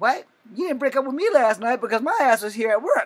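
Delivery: high, loud, indignant tone.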